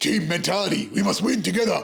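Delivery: blokey meathead sports-fan voice. Showing how they let go at the footy: put-on meathead footy fan voice. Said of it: "let my meathead self go and be like".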